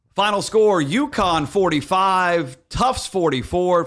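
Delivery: loud, projected PA announcer voice. Showing how a PA voice must be loud, loud projected announcer voice. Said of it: "Doing a P A voice because you got to be sort of loud with it".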